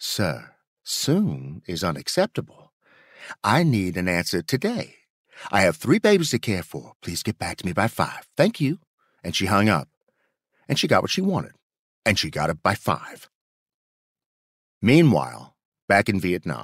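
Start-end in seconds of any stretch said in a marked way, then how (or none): 0.0-8.8 polite, put-on Southern drawl. Retelling a phone call to the Secretary of the Air Force: Louise's polite Southern drawl. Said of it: "In her oh-so-polite Southern drawl".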